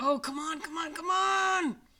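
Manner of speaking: put-on very high, stretched-out, frustrated scream. Sports fan retelling screaming at the TV because the team is close: retelling screaming at the TV. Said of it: "I'm screaming at the TV".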